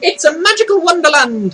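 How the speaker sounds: put-on failed Irish accent. Recalling a line about following a rainbow: attempted Irish accent. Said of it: "I can't do the Irish voice".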